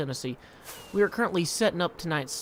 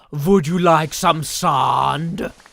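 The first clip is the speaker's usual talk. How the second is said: very loud, slow, stretched put-on Korean accent; 12 dB louder than usual. Reading a viewer's chat message aloud on stream, in a put-on Korean accent. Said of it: "in his best Korean voice".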